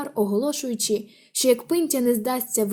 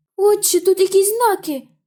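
sudden loud, high cry; 8 semitones higher, 6 dB louder than usual. A boy with a torch spots writing on a stone and calls to Father; crying out. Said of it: "скрикує хлопчина зі смолоскипом".

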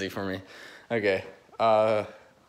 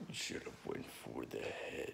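breathy, deep movie-villain whisper; 11 semitones lower, 21 dB quieter than usual. Quoting a line from Infinity War, deep put-on voice. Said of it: "his voice is kind of deep".

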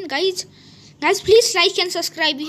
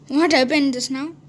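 ordinary delivery

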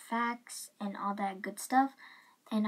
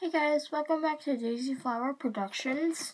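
high voice, talking with mouth full of candy; 5 semitones higher, 4 dB louder than usual. Welcoming viewers back to the channel, talking while eating candy. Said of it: "I'm eating a candy cane".

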